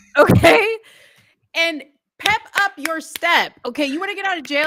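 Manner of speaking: high, loud, pushy, motivated pep-talk voice.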